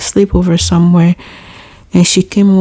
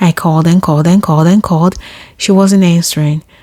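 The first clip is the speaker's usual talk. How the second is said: ordinary talk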